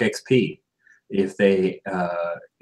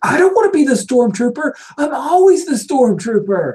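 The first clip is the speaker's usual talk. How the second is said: put-on loud, very high, shrill child's screech; 5 dB louder than usual. Voicing a kid at play who refuses a role: screaming kid. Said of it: "one of them screams".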